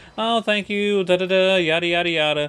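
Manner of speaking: friendly, nice customer service voice. Describing work, acting out talking to customers in a customer service voice. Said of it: "I do my customer service voice".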